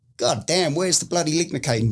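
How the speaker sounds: high bad fake Australian accent. Retelling the doctors on the intercom, in a really bad Australian accent. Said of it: "that's a really bad accent".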